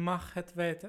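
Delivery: ordinary talk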